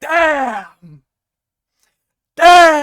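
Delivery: explosive frustrated outburst.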